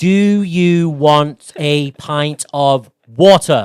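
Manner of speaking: slow loud speech. Showing how you talk to a very drunk friend to get them home, talking slowly. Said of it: "you have to talk to them slower".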